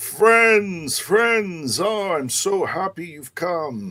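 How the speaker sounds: very high, jolly, jovial voice. A large man greeting the arriving friends, in a jovial voice. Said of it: "a jovial voice is".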